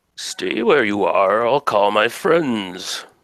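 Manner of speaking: supernatural creature voice. Voicing a supernatural creature that speaks to the listeners, deep creature voice. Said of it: "this thing says in this deep voice".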